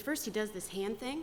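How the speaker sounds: ordinary delivery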